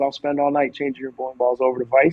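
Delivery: plain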